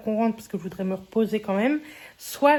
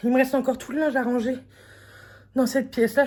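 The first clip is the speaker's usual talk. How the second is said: out of breath, higher pitch; 2 semitones higher than usual. Doing housework on a hot day, talking viewers through the chores; out of breath. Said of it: "Je suis essoufflée".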